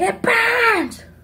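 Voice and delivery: put-on very high, loud tearful sob. Retelling how the prank victim cried in the bathroom: imitating someone crying. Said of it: "She's like".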